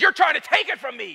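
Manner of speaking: mock furious, accusing angry outburst, very high. Retelling the moment the character turns on Gandalf: imitating Bilbo angry. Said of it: "he starts getting angry with Gandalf".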